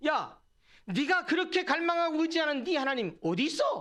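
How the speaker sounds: high, mocking, taunting tone. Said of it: "라고 조롱합니다".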